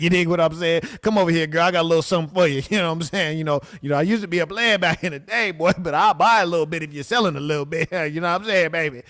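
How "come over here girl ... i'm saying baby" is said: put-on, sweet-talking old sugar daddy voice. Mocking how a man sounds, the speaker does an old sugar daddy voice.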